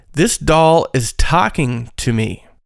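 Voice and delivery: plain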